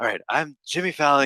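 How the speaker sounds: put-on breathy voice. Explaining how they do impressions, a speaker demonstrates: breathy exhaling Jimmy Fallon impression. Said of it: "It's just like exhaling".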